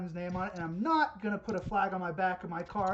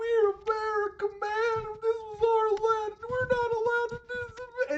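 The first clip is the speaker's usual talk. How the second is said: mock crying, much higher and louder; 5 dB louder than usual. Mimicking a tearful QAnon woman's protest, imitating someone crying. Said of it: "And she's in tears".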